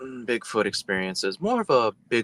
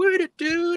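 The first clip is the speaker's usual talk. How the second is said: mock yell, much higher; 4 dB louder than usual. Retelling a man yelling as the speaker taps the brakes, imitating someone yelling. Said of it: "he's over there yelling".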